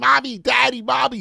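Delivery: put-on creaky little toddler voice, small child. Joking about a kid old enough to talk, in a toddler voice. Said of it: "the kid is walking and talking like".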